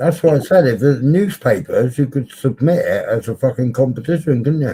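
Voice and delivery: talking while chewing, mouth full. Chatting with someone while eating, talking with mouth full. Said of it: "Don't speak to me with your mouth full".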